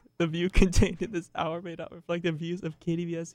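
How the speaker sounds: reading while giggling, trying not to laugh.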